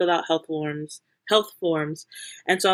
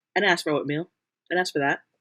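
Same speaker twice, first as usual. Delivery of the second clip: ordinary delivery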